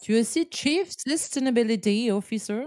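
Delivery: put-on attempt at an English accent. Addressing the other speaker, stating her english job title in a put-on english accent. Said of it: "c'est le moment de sortir mon meilleur accent anglais".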